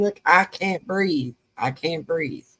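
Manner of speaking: ordinary talk, nothing marked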